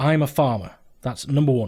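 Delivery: ordinary delivery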